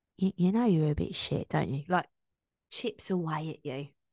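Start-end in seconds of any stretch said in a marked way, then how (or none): 0.2-1.9 little, small, nitpicking, doubting voice. Voicing a person's self-doubt as it chips away at them: little nitpicking voice of doubt. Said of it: "Like a little voice".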